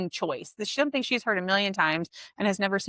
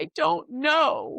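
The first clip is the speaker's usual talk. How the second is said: high, tearful voice, speaking through tears; 7 semitones higher than usual. Retelling what she said through her tears, imitating tearful speech. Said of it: "through her tears".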